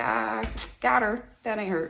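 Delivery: high, play-acted words spoken through laughter. Retelling laughing in the room after a whooping: imitating own laughing. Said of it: "I start laughing like".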